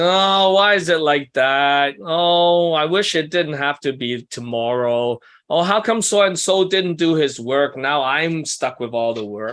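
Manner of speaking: put-upon whine. Acting out how stressed analytical people talk: imitating a whiny voice. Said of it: "They like to whine".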